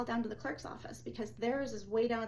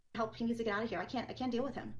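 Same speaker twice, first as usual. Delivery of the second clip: ordinary talk, nothing marked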